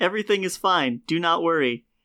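creepy, too-calm, soothing yet unsettling voice. Greeting the audience as a co-host, mock unsettling reassurance. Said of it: "Why do you say it like that?".

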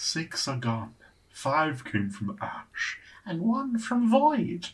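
swooping, sing-song character voice. Asked to read the password clue aloud in the December character voice. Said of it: "Do you want to read this in the December voice?".

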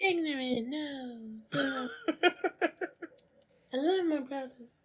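put-on soft high voice. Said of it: "The camera's goes like".

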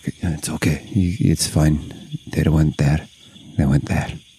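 low muttered whisper under the breath. Player's character casts lay on hands while others watch, whispering under breath. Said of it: "I'm just whispering underneath to my breath".

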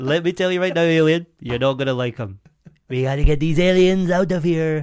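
loud put-on Mexican accent. Bantering about aliens asking for a leader, doing a Mexican Trump impression. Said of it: "That was a Mexican Trump".

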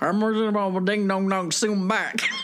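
put-on quick mumbled Texan accent. Speaker imagining how another man would talk: Boomhauer voice. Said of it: "talking like Boomhauer from King of the Hill".

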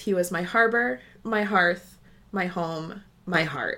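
emotional, choked up, near tears. Reading a funeral tribute quote aloud while trying not to cry: emotional, near tears. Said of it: "you doing okay over there?".

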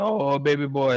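thick-as-molasses Southern American voice. Quoting one of the wrestler's classic lines without claiming a good impression, Dusty Rhodes talking real Southern. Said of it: "he talked real Southern".

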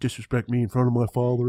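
put-on TV character voice with dry delivery. Talking about an actor's role, quoting a line in McNulty's voice. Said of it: "I love the the voice that McNulty used when he's like".

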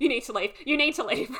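frantic, panicked, rushed, high-pitched delivery. Retelling how Lottie tells the group to leave: imitating Lottie panicking. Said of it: "she's, like, panicking".

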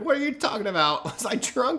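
put-on very high-pitched old man character voice. Retelling what he used to say: imitating an old man voice. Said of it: "he pretty much always had that old man voice".

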